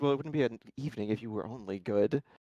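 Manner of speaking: low, mumbled muttering under the breath. Voicing a character's reaction to the others leaving: muttered under his breath. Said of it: "under his breath".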